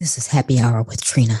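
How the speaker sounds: slow, smooth, mellow late-night radio DJ delivery. Playing along after being told to sound like late-night radio: smooth late-night radio host voice. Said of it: "like a late night radio talk person".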